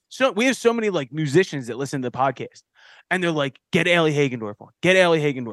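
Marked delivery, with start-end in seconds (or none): none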